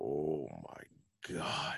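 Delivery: low, dropped voice, said emphatically. Retelling a film scene, imitating Commissioner Gordon's "Oh my God". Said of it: "up there with, uh, Chris Farley's delivery in Tommy Boy".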